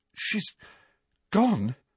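stunned and shocked, voice lifted. A boy learns that an injured woman was transferred away: shocked.

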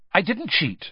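sharp, high, curt, cutting tone. Harry replying to Moody, said sharp. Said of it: "said Harry sharply".

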